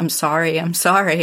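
mock trembling, shaking, quavering voice. Parent recounting son's call after crashing his car, imitating son's shaking voice. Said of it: "with his voice shaking".

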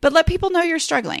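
choked-up emotional voice. Urging listeners to tell others they struggle, getting emotional. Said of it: "I'm gonna get emotional again".

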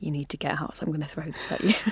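very quiet speech. Holding a tray of tea, recalling warning her brother, retelling saying it very quietly. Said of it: "I just said very quietly".

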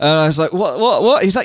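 ordinary delivery

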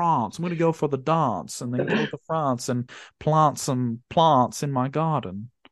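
put-on slow, refined Australian accent. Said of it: "his very posh Australian accent".

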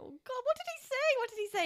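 play-acted, very high-pitched, frazzled, stressed, panicked fretting. Retelling being unable to catch a customer's order: retelling own stressed self. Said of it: "I was really getting stressed out".

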